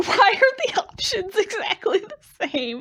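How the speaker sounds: high, loud, speaking through hard laughter. Streaming a game, speak while laughing really hard. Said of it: "(Laughing really hard)".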